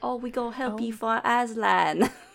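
put-on drawn-out Cockney accent. Recalling a beaver from the Chronicles of Narnia: Narnia beaver Cockney accent. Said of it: "this, like, Cockney accent".

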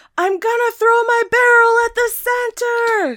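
shrill, very high, loud shout. Narrating a chase, the storyteller voices a character yelling back to his pursuer. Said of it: "he yells back to you".

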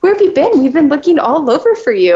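put-on high, rapid, sing-song little-kid voice. Retelling how she questioned Jasmine, the speaker repeats her own words; sounding like a little kid. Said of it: "you sounded like a little kid".

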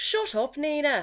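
put-on Irish accent. Showing another speaker how to do Irish, the speaker uses an Irish accent. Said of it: "if you wanted to do Irish".

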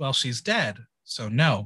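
mock flat deadpan. Recapping a show moment, quoting Pandora's answer, retelling Pandora's deadpan. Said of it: "Pandora deadpan says".

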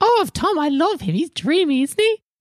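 tiny, very high-pitched pixie voice. Voicing a little pixie woman with a clipboard at the atrium: pixie woman voice. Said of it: "there's this little pixie woman with a clipboard".

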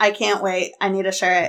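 plain

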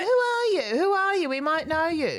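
loud, very high-pitched put-on English accent. Retelling a stranger's question: imitating an English accent. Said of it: "She's English".

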